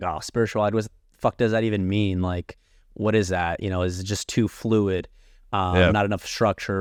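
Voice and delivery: plain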